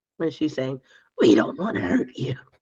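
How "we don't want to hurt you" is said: very gurgled, wet voice, stuff in the throat. Voicing a figure speaking to a frightened man, in a very gurgled voice. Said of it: "in a very gurgled voice".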